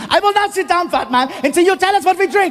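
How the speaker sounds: yelling angrily in German. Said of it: "the guy, he refuses".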